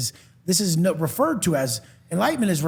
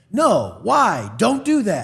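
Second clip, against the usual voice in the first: put-on agitated, snappy young teen voice, very slow, swooping, drawn out; 3 semitones higher, 4 dB louder than usual. Retelling how the baby talks, imitating a snappy child. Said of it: "kinda snappy like a thirteen-year-old".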